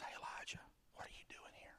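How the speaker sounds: put-on whisper. Retelling God speaking to Elijah in the cave, retelling a whisper. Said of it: "he finally whispers".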